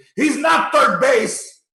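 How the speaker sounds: very high, drawn-out, outraged angry yell. Retelling how an aunt reacted at a grandmother's house: imitating aunt yelling. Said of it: "she's yelling at me".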